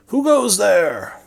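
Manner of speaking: loud, very high-pitched shout. A narrator voices someone in a watching crowd calling to a person stepping out, yelling. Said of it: "someone yells".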